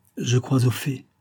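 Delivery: plain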